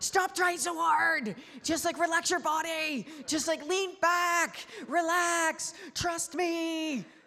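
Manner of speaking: very high, slow, gentle kindly yell. Recounting calling out to a kid trying to float, retelling a gentle yell. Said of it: "I'm yelling at this kid. I'm just like in a nice way".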